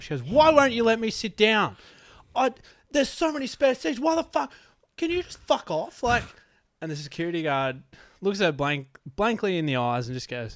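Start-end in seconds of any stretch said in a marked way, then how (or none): 0.2-6.0 very high-pitched, shrill, loud, furious angry rant. Retelling a woman's rant at a security guard who wouldn't let her sit; retelling an angry tirade. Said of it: "she went on a tirade".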